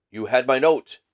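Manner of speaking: put-on strong German accent. Reading a story aloud, a masked visitor asks about his note: deep harsh voice, strong german accent. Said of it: "with a deep, harsh accent and a strongly marked German accent".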